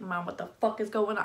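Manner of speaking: put-on voice of a dog. Voicing the dog after spraying hairspray toward it: voicing Izzy the dog. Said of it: "He's like".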